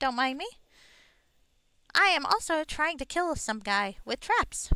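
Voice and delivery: little sprite-like, fairy-like pixie voice. Setting traps to catch another player, speaking in a pixie voice. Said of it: "I am speaking in a pixie voice at the moment".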